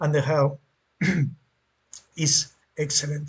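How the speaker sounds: voice breaking and cracking on the words. Recommending gear pieces for different builds to players: voice cracking. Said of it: "my voice is cracking".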